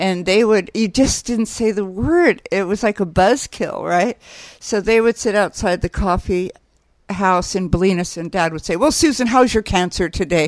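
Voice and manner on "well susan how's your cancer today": put-on really loud voice. Telling a story about their dad and a friend, retelling a really loud remark. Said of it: "Really loudly".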